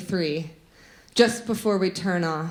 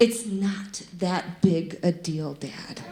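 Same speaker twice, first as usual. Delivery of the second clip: mock dead-serious, solemn tone. Retelling what she told her dad at age four, in her most mock-serious tone. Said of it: "I said in my most serious tone".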